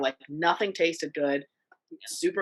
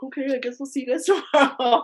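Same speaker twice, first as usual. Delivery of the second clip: put-on let-down, deflated, higher-pitched voice; 8 semitones higher than usual. Retelling her mom's words after a hospital trip, imitating a bummed mom. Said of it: "and then she's all bummed".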